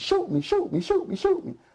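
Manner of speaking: acted-out yelling. A police officer recounts a man with a gun to his head: retelling a man yelling. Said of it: "he puts the gun to his head and he's yelling".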